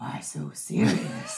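puppet monster character voice. Quoting the Joker line as a joke: Cookie Monster voice. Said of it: "That was Cookie Monster".

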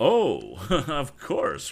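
laughing, high and loud. Ned answers the young inventor Tom's protest, replying with a laugh. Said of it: "replied Ned with a laugh".

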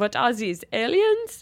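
attempted French Canadian accent that lands as German. Reading a story aloud, voicing a shouting hockey goalie: Fleury voice, accent sounding German. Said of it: "Except that sounded German, and he's French Canadian".

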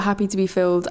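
normal talking voice

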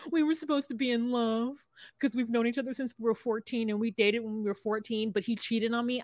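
acted, tearful words pushed out through crying. Retelling what a woman on the show said: imitating someone crying. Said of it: "And she starts crying".

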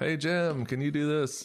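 loud yelling.

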